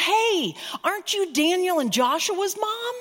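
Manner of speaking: calling out in a high-pitched yell. Retelling how a woman in a car called out: imitating a woman yelling. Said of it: "the window came down and she yelled".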